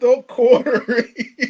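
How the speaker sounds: high, loud laughing and giggling.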